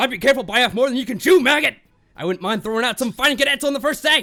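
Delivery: rough, gravelly voice. Trying out a voice for another person's character, gruff voice.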